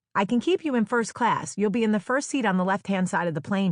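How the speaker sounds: usual speaking voice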